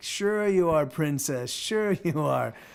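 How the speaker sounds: amused, slow, chuckling, disbelieving voice. Retelling a man's reply to the speaker's claim of being a farm worker: imitating a chuckling man. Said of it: "you hear this like chuckle".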